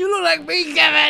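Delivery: mock shout, high-pitched and loud.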